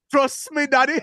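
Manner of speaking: put-on high, loud Jamaican accent. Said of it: "All you need is a [name], uh, Jamaican accent".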